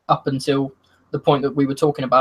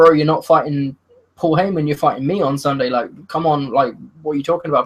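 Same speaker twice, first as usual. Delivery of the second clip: usual speaking voice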